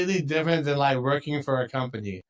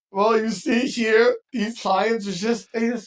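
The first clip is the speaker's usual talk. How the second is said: high, slow fake sobbing, whimpered out. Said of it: "Sorry, I'm not crying, you're crying".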